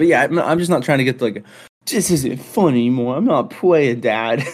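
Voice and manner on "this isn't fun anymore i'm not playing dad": mock whining child's fit, higher pitch. Imitating a son complaining during a game: imitating a son's whiny fit. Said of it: "how I picture him in, in a whiny fit".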